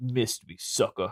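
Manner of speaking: cocky, offhand, taunting thug-style tone. Retelling a movie scene where Dwayne gets up: Dwayne like a thug. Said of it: "Totally like that, like he's a fucking thug".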